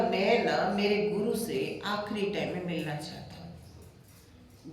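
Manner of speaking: ordinary delivery, nothing marked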